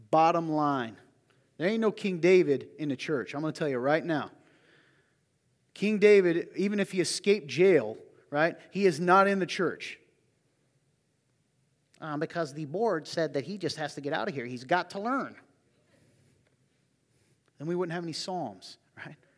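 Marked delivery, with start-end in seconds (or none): none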